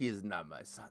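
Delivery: put-on thick Latin American accent.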